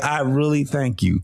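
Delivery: put-on slow, drawn-out, heavy sarcastic delivery. Retelling how a woman thanks someone every time she sees them: imitating a sarcastic thank-you. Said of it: "She's out here being sarcastic".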